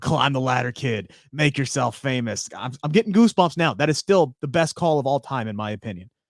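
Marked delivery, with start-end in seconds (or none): none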